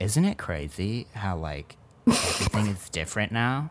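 flamboyant camp manner. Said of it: "you don't need to give him that voice".

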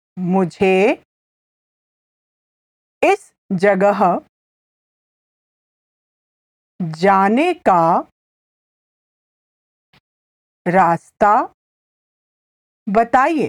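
very slow, careful Hindi, each word laid out. Teaching a Hindi phrase to listeners, repeating it with slow, careful pronunciation. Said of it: "I'll say it again slowly".

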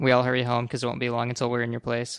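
ordinary delivery

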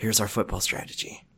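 hushed low murmur. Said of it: "I know this is very effeminate, right, what I'm doing right now".

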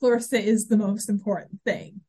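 ordinary talk, nothing marked

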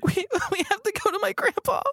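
sniveling and crying. A game narrator voicing a female character, sniveling and crying. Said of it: "she starts sniveling and crying".

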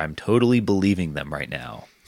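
dripping, heavy, obvious sarcasm. Commenting on a long-term repatriation plan, sarcastic. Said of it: "I'm sarcasm voice here".

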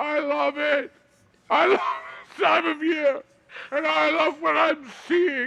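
tearful, crying speech. Telling the others how moved they are by the true meaning of christmas, crying while talking. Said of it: "I'm crying because".

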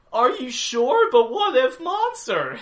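high-pitched voice with a swooping, rising and falling tune. Retelling a cartoon's camping trip scene, imitating Joanna. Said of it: "Joanna's like".

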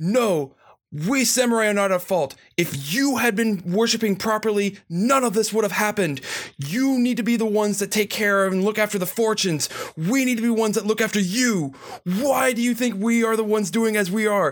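angry, heated, accusing rant. Playing an angry samurai confronting a fallen foe: in-character yelling. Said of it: "just starts yelling".

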